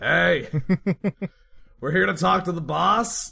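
calling out above noise. Playing Mordecai, a player calls out above all the hubbub, shouting over the hubbub. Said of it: "just kind of starts shouting a little bit".

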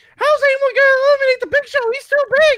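very high, loud, squeaky cartoon-mouse voice. Imitating a wrestling commentator asking who can eliminate the Big Show: Jerry Lawler impression, Mickey Mouse-like. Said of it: "is Jerry Lawler now Mi-, Mickey Mouse?".

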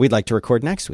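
ordinary delivery

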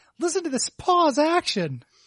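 put-on young boy voice. Retelling a friend's old video game tape: imitating Derek Hayes's prepubescent voice. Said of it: "his little, like, prepubescent voice is like".

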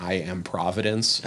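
ordinary talk, nothing marked

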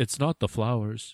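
mock robotic, robot-like line reading. Describing what she says after sneezing, imitating a robotic delivery. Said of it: "she sneezes and she goes".

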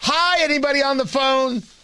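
high, drawn-out, loud projected holler. Showing what he would not do on entering the room: imitating a scream. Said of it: "I don't immediately scream".

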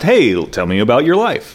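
plain

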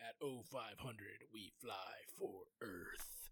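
mock menacing tone. Recapping a show's final scene and quoting a character: mock-menacing. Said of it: "him just like menacingly saying like".

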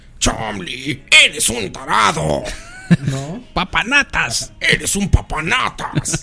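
classic cartoon old-timer voice, high and creaky. The speaker demonstrates the classic cartoon old man's voice: classic cartoon old-man voice. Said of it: "es como el clásico viejito de caricaturas".

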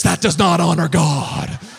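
loud, slow, emphatic voice.

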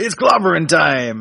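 put-on cartoon superhero voice, bold heroic delivery. Voicing a character while telling its story, The Thing voice. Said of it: "Get me to voice the thing".

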